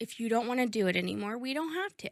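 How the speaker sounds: put-on sweet and serious tone. Retelling how he answered her doubts about what she's doing: imitating a sweet, serious tone. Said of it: "he very seriously and very like sweet goes".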